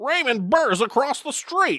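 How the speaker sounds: voice pushed way up high. Doing a movie quiz answer in a Jimmy Stewart impression. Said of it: "The first one wasn't bad".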